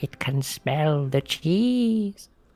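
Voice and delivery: whispered aside in an acted character voice. Whispering to Mel in character about a creature: whispering in character. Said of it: "Sort of just whispers to Mel".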